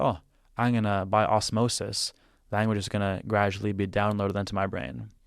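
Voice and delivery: ordinary talk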